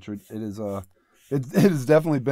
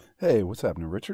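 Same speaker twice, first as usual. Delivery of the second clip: put-on on-air radio broadcaster voice; 2 semitones lower than usual. Guest greets the host at the start of an interview, in a radio announcer voice. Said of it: "that was my radio voice".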